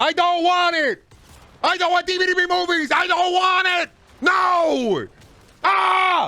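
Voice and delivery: slow, thundering, very high-pitched, drawn-out scream. Ranting about eight-episode tv seasons: screaming. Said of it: "I'm screaming, I'm thundering into the void".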